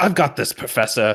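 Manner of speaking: put-on young child voice. Voicing the Malfoy kid stepping in front of them: Doy Pigbreed voice. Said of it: "the Malfoy kid, goes".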